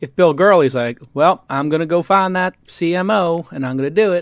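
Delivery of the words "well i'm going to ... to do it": heavy, exaggerated twang laid on thick. Imitating Bill Gurley as a founder sees him: Bill Gurley impersonation with twang. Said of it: "That's my Bill Gurley impersonation".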